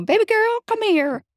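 put-on Southern accent, pitched very high. Retelling how the cook at the shelter called her over: imitating a southern accent. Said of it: "from the South, 'cause she'd go".

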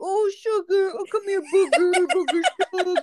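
very high-pitched dog-talk voice. Recalling calling the family dog Sugar: talking-to-the-dog voice. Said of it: "So it'd be like".

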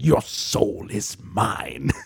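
whispered, breathy, soft, sinister villain voice. Recalling how you tried to impersonate him as a kid, do a Shang Tsung impression. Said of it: "I tried to impersonate him and go".

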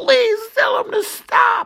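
mock begging scream, very high. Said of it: "starts screaming".

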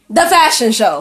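loud, excited hollering yell. Telling the group about the weekend plans, yelling. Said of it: "Stop yelling".

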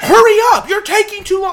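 very high, very loud, shrill screaming. Acting out what a woman screamed at the speaker from outside the bathroom, imitating someone screaming. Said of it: "she's screaming".

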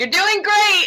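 acted, very high-pitched patronizing, condescending tone. Retelling characters' reply in a show scene, mock-condescending. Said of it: "like just like condescendingly".

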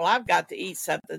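ordinary delivery

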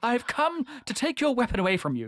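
high-pitched, posh, robotic droid-like voice. Quoting a line from Snakes on a Plane, in an accidental C-3PO voice. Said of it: "Now I've turned into C-3PO".

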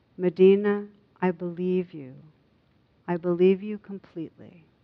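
very gently and tenderly. Dajana, holding medina's hands, speaks to her very gently and tenderly. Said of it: "very gently, very tenderly said".

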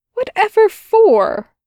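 very high, loud, cried-out exclamation. Aziraphale answers Crowley's apology, cried out. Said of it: "Cried Aziraphale".

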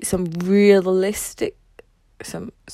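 stuttering, stammering speech. Giving an example, then breaking off: stuttering. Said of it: "sorry, um, I stutter".

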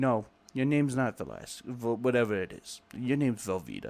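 put-on drill sergeant voice, heavy, thick New York accent. Retelling first meeting a sergeant as a recruit, the speaker imitates his thick New York accent. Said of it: "he had that really like thick New York accent".

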